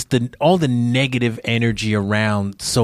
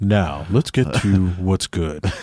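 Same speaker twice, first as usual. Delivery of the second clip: deeper, lowered put-on voice; 3 semitones lower than usual. Showing the co-host how the voice goes, just deepening it: deepened voice. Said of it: "Just deepen the voice and".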